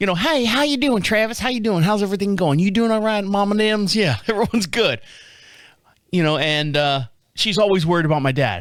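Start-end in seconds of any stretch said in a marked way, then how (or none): 0.2-3.9 put-on Tennessee Southern accent. Telling about greeting Angie while running, the speaker is imitating Angie's southern accent. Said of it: "So that southern".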